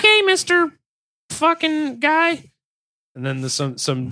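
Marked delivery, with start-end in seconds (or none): 0.0-2.5 put-on young boy's voice, higher. Acting out the boy answering his employer: imitating the boy worker. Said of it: "He's like".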